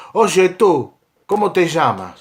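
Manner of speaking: imperious, commanding, high pitched. A storyteller voices a roman centurion calling to a man: shouting with projected voice. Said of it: "con voz imposta la voz, y le grita".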